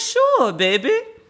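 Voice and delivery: bad put-on New Orleans accent. Quoting the princess's reply when asked for a hug, terrible New Orleans accent. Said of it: "my version of a New Orleans accent".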